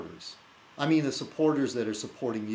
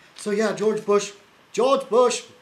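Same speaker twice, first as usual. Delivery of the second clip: shrill, booming, very high, very loud mocking taunt; 11 semitones higher, 9 dB louder than usual. Mocking a rival by imitating how they talk: imitating the other person. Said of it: "you did this thing where you go".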